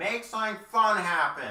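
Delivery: very high, booming, amplified-sounding yell. Casting a spell in character to yell at everyone: magically amplified yell. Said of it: "begrudgingly use thaumaturgy and yell at them".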